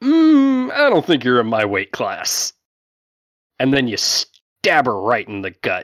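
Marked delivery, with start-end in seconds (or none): 0.0-2.5 high, swooping voice of a captain character. Narrating a fight, voicing the enemy captain as she brushes off a challenger: voicing the enemy captain. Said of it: "And she's just like".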